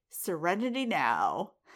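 plain

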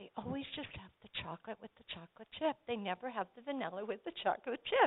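muttering to oneself. Speaker retelling what they quietly said to themself in the co-op, muttering. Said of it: "I quietly say to myself".

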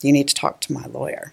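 mock-serious joking tone. Parent retelling the twin sister's reply about getting shots: retelling a joking reply.

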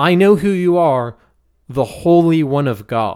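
ordinary talk

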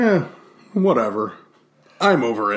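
slow, smug, can't-be-bothered drawl. Acting out a reply to friends asking about a cheese: mock smug. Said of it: "You can be smug about it".

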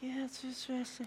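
feeble, faint, wimpy, high-pitched little voice from afar. Speaker retells a guy answering from the back of the house, in a faint, wimpy voice. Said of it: "his faint, wimpy voice".

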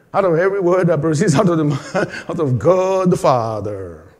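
put-on American accent. Retelling what a man who stopped for him said, American accent. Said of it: "American accent".

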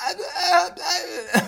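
very high, stunned, wordless stammer. Retelling how mom reacted to the bleeding visitor: imitating a speechless stammer. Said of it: "speechless about the whole thing".

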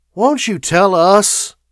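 loud, drawn-out, impatient pleading tone. Cabell presses the thinking machine for an answer: impatient pleading. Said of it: "pleaded Cabell impatiently".

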